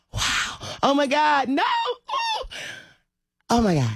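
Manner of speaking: awestruck, very high, swooping shrieks of wonder. Retelling watching the circus: imitating own amazed screaming. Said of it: "I could not stop screaming".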